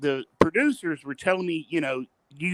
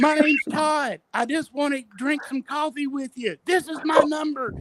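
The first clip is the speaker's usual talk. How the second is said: put-on screaming, higher; 10 semitones higher than usual. Retelling being carried away from a celebrity: retelling own screaming. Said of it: "I was screaming out".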